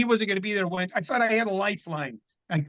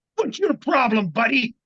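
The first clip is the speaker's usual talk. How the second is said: put-on angry snapping voice, higher; 5 semitones higher, 4 dB louder than usual. Retelling how a comic on stage snapped at him: imitating someone snapping. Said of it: "looks at me and snaps".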